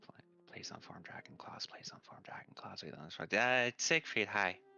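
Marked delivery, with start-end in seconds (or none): 0.0-3.2 hushed, barely whispered mumbling under breath. Playing a character muttering a plea to herself: muttering under her breath. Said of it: "Just under her breath".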